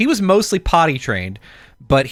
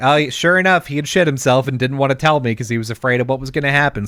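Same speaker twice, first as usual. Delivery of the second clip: ordinary talk, nothing marked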